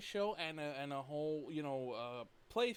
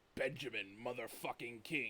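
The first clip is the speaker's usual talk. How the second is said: deep movie-trailer voiceover announcer voice; 4 semitones lower, 4 dB quieter than usual. Retelling a line from a game trailer: imitating a deep-voiced trailer announcer. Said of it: "the deep voice announcer".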